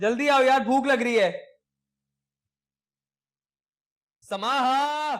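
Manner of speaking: loud yelling, shouting. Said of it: "क्यों चिल्ला रहे हो?".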